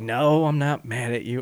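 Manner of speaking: slow, seething, fuming voice. Retelling a film scene, imitating the boyfriend fuming: imitating someone fuming. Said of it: "And he's fuming".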